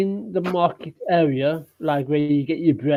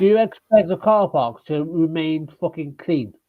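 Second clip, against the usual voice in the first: plain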